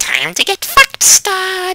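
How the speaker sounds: very high, swooping, drawn-out goblin voice. A game narrator voices a goblin stepping out of the bushes, in a goblin voice. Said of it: "that's your goblin voice?".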